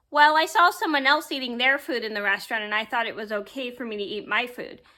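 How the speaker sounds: usual speaking voice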